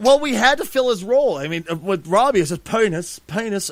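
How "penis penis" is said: best-effort put-on British accent. Filling an absent person's role, Robbie impression in a British accent. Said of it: "that's the best British voice I can get".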